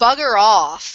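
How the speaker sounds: slight growl through words. A character answers a smirking man who mocks her, growling a little. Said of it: "she kind of growls a little and says".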